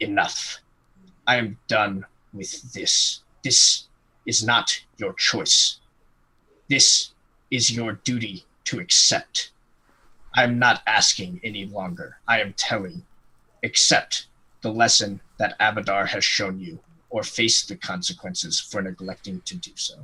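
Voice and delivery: seething hiss through clenched, gritted teeth. Playing a seething character who has run out of patience: through clenched teeth. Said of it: "like through clenched teeth, he's like".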